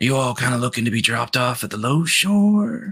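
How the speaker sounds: whispering low under breath. Voicing a ship captain who whispers as a guard walks past: whispering low under breath. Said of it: "he kinda whispers a little low in his breath".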